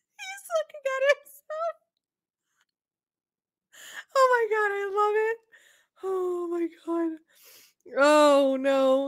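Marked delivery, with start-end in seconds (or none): 0.2-7.2 teary, crying through words, high and soft. Watching him look at his own reflection, the speaker talks while crying. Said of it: "I'm crying".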